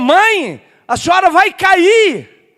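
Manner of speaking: high, loud, drawn-out shout. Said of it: "Aí ele gritou".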